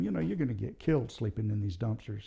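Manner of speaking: ordinary talk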